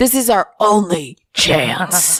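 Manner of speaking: preachy motivational-speaker delivery like a seminar coach. Giving a pep talk about living in the moment: Tony Robbins impression. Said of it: "when I do a Tony Robbins impression".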